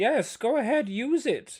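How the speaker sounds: very high, very slow, drawn-out, ethereal Irish voice. Imagining what Frost's ethereal voice would tell the group: Irish accent. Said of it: "in a very good Irish accent".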